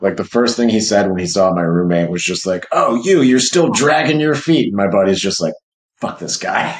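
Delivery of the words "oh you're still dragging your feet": high, put-on frog voice. Retelling what a man said on seeing the speaker's roommate, imitating a frog voice. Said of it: "almost like frog voice".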